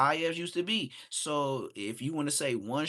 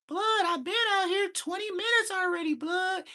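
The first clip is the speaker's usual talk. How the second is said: put-on very high, squeaky, unbroken boy's voice; 3 dB louder than usual. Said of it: "that high-ass voice where his nuts ain't dropped".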